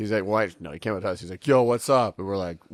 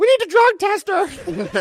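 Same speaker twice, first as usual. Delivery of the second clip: tiny little voice, very high-pitched and very loud; 10 dB louder than usual. Retelling what the boy was heard saying during the round: small little voice. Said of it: "this little voice being like".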